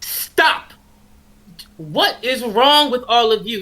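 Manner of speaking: full motherly scolding voice. Player character addressing the pirates as the fire stops: scolding like a full mom. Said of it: "She like a full mom".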